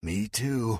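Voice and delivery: faint, weak, feeble little voice. Reading a story aloud where a wounded captive answers: weak voice. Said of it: "in a weak voice".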